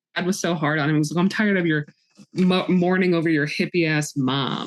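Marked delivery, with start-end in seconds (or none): none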